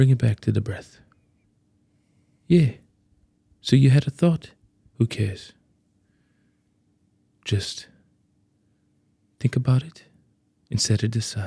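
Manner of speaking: put-on genuine calm South African accent. Showing a friend how a South African guy talks, calm South African accent impression. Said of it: "I can mimic his voice".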